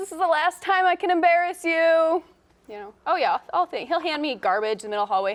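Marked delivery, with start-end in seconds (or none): 0.0-2.2 mock shout, loud and high-pitched scream. Retelling what dad screamed at graduation: imitating someone screaming. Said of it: "he just screams".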